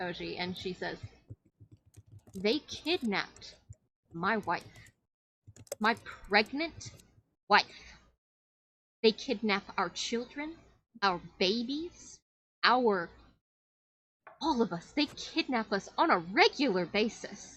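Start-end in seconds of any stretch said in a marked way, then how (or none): 2.3-17.6 put-on elderly grandma way of speaking. A storyteller voices a woman who confronts Oji, in a grandma voice. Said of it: "It's a grandma voice".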